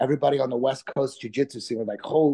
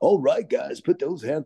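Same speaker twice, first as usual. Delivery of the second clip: put-on club DJ announcer voice that cuts through. Explaining why club DJs talk like that, the speaker does the fake DJ voice. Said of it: "It's the fake D J voice".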